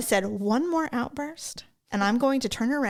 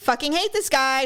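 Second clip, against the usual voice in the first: loud, open delivery for all to hear; 3 dB louder than usual. Retelling a remark said loudly to a friend at dinner: retelling saying it loudly. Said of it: "And I said it loud".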